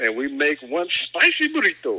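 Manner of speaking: sing-song put-on Italian accent. A show host does a bit for listeners, in an Italian accent. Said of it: "I did an Italian accent for that".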